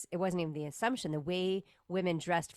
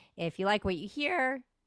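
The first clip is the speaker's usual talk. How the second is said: voice cracks and breaks mid-line; 4 semitones higher than usual. A podcast host signing off the episode, voice cracking. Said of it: "not my cracking voice".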